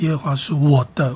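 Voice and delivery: strong stress placed on 我的. Reading lesson on stressing the important word, stress on 我的. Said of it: "我要强调的是我的".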